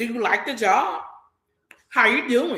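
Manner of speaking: play-acted curt, snippy tone full of attitude. Retelling how a dessert coworker greeted them: imitating a coworker's attitude. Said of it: "it was just the attitude".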